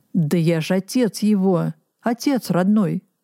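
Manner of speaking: ordinary delivery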